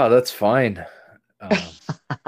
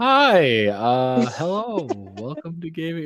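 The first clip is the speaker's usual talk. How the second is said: put-on lost, confused tone, higher; 5 semitones higher than usual. Imitating own earlier episode openings, mock lost and confused. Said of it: "like, I'm lost and confused".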